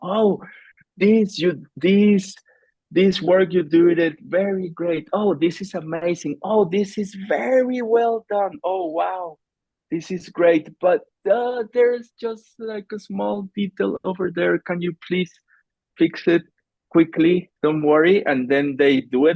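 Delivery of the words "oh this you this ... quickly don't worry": put-on gentle, kind, encouraging tone, pitched up. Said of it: "very kind and empathic".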